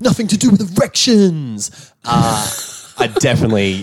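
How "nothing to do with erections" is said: fake British accent, higher. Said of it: "doing a really bad British person".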